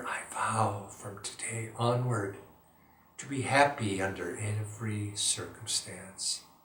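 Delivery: gentle, soft, hushed half-whisper. Meditation guide repeats an affirmation a second time, half-whispering. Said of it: "in a whisper".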